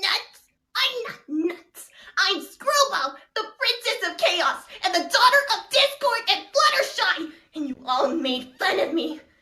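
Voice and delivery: put-on cartoon voice, high, swooping, bouncy, sing-song. Trying a voice after last-minute donations: Screwball character voice. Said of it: "I can kind of imitate Katie Constance".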